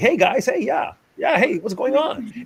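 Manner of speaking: breezy, casual, high-pitched voice. Retelling how Sherrod greeted people: imitating Sherrod. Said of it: "he'd be like".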